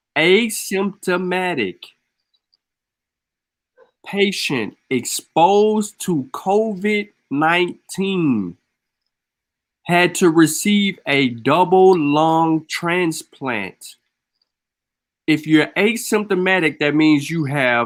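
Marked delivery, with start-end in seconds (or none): 0.1-13.9 slow, careful, deliberate word-by-word delivery. Repeating a report about a double lung transplant, slow and deliberate. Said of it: "I'm going to say that slowly".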